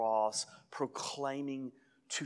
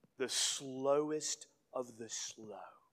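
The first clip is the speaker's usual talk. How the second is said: ordinary delivery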